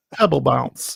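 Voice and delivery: put-on British accent. Speaker repeats the other speaker's phrase after saying it needs a British accent; put-on British accent. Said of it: "you have to say that with a British accent though".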